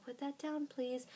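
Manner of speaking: calm, patient parent voice. Describing parents who never raise their voice with their kids, imitating one. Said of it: "they always talk like this".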